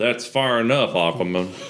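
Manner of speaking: firm, put-on Southern US accent. Recapping a scene, the speaker voices the real tall man with a southern accent. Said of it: "has a southern accent. He goes".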